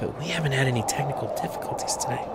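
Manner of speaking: very quiet, hushed, breathy whisper. Saying it quietly so as not to jinx the game: whispering. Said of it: "I cut out because I'm whispering".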